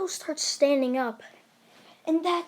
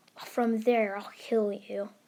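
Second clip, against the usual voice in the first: ordinary delivery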